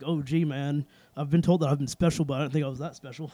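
plain

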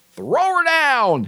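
very high, bold, swaggering bravado. Quoting a YouTube lawn care nut on fertilizer: imitating Alan's bravado. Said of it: "with as much bravado as he does".

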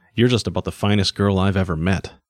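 plain reading voice

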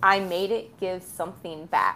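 put-on chillingly quiet voice. Retelling a book scene, quoting a character's line: imitating terrifying quiet. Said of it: "with terrifying quiet".

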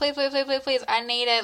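ordinary talk

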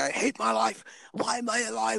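mock, very high, rough, slow, drawn-out angry shout. Retelling how a guy in a conversation suddenly started shouting at the speaker. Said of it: "this guy just started shouting at me".

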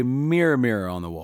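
normal talking voice

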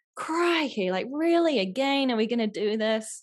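slow, fed-up, frustrated exasperation. Showing how to say Crikey after dropping something: frustrated Crikey. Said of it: "you can really play with the intonation of that word".

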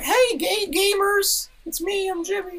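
very high, weird voice stretched out slowly. Answering what Jimmy sounds like: Jimmy Neutron voice. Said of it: "what is fucking Jimmy sound?".

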